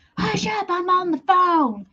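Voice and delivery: loud drawn-out yelling. Remembering how mom yelled at the kids, imitating mom yelling. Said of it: "I can remember my mom yelling at us".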